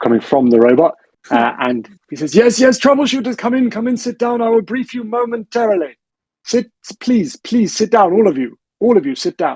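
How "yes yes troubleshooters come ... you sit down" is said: put-on very high-pitched elderly man's voice. Narrating a scene, the speaker voices a robot greeting the troubleshooters: old man's voice. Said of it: "there is like an old man's voice coming from".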